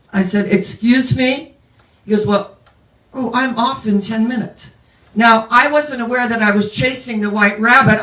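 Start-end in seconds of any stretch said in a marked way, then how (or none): 2.3-4.8 put-on mimicked English accent. Retelling a man's reply about the flooded room, imitating an English accent. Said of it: "in his English accent".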